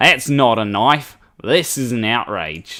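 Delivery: botched attempt at an Australian accent, slightly off. Acting out one person's comment as Croc Dundee would say it: Croc Dundee accent. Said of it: "Didn't quite get the accent right there".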